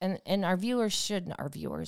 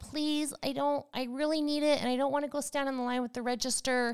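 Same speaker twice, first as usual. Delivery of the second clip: put-on whiny, pleading baby-like voice; 7 semitones higher than usual. A speaker retells begging a woman to let them keep the ice, imitating babyish pleading. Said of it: "You sound like such a baby".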